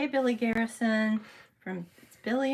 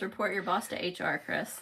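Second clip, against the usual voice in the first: ordinary delivery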